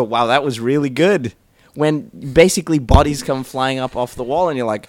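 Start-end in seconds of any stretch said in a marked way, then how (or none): none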